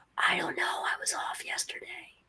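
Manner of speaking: hushed, barely voiced, very quiet whisper. Voicing a librarian answering another librarian: whispering. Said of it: "the first librarian whispers back".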